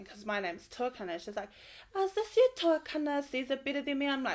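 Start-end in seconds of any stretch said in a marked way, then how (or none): 1.9-4.1 nanny-style voice, high and loud. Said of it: "talks like Super Nanny".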